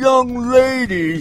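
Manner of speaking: put-on heavyset woman voice. Speaker quoting a woman addressing a young lady, fat woman voice. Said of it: "That's my fat woman voice".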